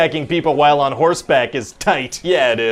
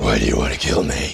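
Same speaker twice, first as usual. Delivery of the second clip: extra growly, gravelly superhero voice. Asked what Batman sounds like now, answering in a growly Batman voice. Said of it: "his growly voice got a whole lot more growly".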